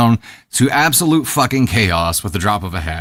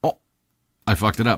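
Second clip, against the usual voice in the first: ordinary talk, nothing marked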